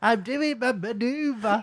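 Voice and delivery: mock nervous announcer voice, very high and shouted. Retelling calling out a driving test manoeuvre: imitating own nervous move-announcing. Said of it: "shouts the move he's doing".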